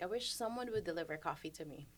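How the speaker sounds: ordinary talk, nothing marked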